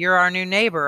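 ordinary delivery

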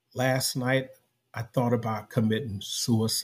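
mock whispering. Retelling what she whispered when she called him over: imitating someone whispering. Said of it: "And she whispers".

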